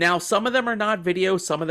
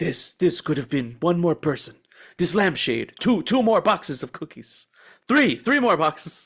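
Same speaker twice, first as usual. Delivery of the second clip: acted sorrowful, lamenting heroic voice. Regretting the cookie boxes not bought, quoting as Oskar Schindler: Oskar Schindler impression. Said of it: "I'm like Oscar Schindler in Schindler's List".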